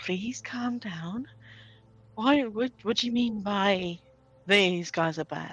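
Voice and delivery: gentle, reassuring, really calming, soothing voice. As a character speaking telepathically to a frightened companion: really calming voice. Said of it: "in a really calming voice".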